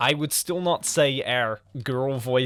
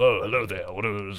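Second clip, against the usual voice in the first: funny, low, goofy put-on dude voice; 4 semitones lower than usual. Showing the voice they put on for dudes in their videos: funny put-on dude voice. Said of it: "a funny voice we put on for the dudes".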